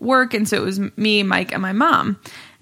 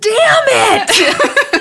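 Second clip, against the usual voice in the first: shrill, very high, loud yelled outburst; 13 semitones higher, 7 dB louder than usual. Telling a story about watching tv in the basement, retelling a yell. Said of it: "but I just yelled".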